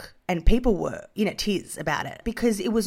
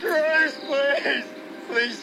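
put-on high, slurred-sounding drunken yelling; 6 semitones higher than usual. A drunk character in a scene, drunken yelling. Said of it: "Stop yelling".

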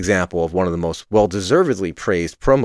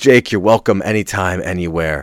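ordinary talk

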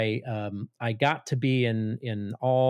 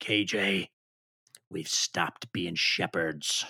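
very slow, drawn-out, low, gruff, gravelly growl; 4 semitones lower than usual. Retelling what an old professor said over lunch: imitating Lyle Dorsett's gruff gravelly voice. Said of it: "he's got that old gruff, gravelly voice".

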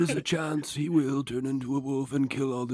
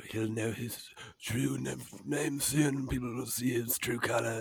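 put-on old wizard voice, much quieter; 10 dB quieter than usual. Discussing the Harry Potter films, speaker acts out how Dumbledore would say it: first Dumbledore impression. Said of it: "that's the first Dumbledore".

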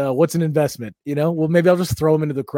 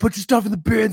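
play-acted security guard voice, high and yelled; 8 semitones higher than usual. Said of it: "the security guy scream-".

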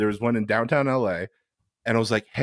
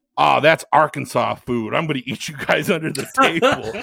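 put-on tough voice, higher; 4 semitones higher, 4 dB louder than usual. Retelling what a friend said about the pantry: imitating Jamie's tough voice. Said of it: "she really talked like with that voice".

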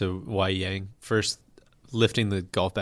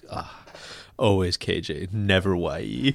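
very slow speech directed to oneself. Retelling how a golfer was overheard after signing autographs: imitating Y.E. Yang muttering. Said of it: "they hear him just muttering to himself".

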